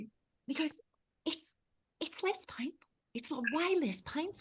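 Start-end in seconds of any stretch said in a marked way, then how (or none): 1.2-4.4 put-on whisper, higher and quieter. Retelling a friend's reaction while others present up front: imitating someone whispering. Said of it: "whispering 'cause the girls are up the front".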